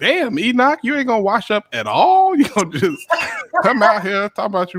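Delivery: put-on disgusted complaint. Acting out a man in a picture who smelled something: voicing a man disgusted by a smell. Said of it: "He like".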